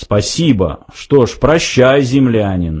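ordinary delivery

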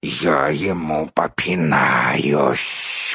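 angry, furious, very low hissing spider voice. The narrator reads an enraged spider's reply, angry hissing spider voice. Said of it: "прошипел разгневанный паук".

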